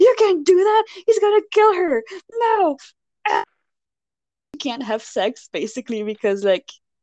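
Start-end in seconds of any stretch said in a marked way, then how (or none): 0.0-2.8 play-acted, very high-pitched, shrill angry yelling. Recounting a story's plot, acting out him yelling at her, mock-angry yelling. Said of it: "he gets all mad and yells at her".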